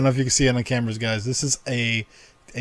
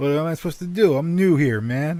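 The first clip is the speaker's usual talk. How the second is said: put-on New York accent, pitched up; 5 semitones higher than usual. Retelling own words to a toll booth worker: put-on new york accent. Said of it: "throwing my New York accent out".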